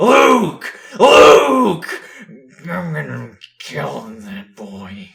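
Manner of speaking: put-on dazed, slow, drunken hollering. A dazed uncle wanders the premises searching for the boy; drunken calling out. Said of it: "[name] wanders the premises dazed, in a drunken stupor, / [name] wanders the premises dazed, in a drunken stupor, / He calls out to him, / in a drunken stupor, / he growls".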